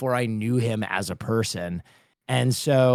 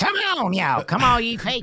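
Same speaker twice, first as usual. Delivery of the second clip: very high, sing-song, swooping preacher cadence; 12 semitones higher than usual. Recalling running into the listener and another guy doing their bit, imitating a preacher voice. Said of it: "preacher fucking voice".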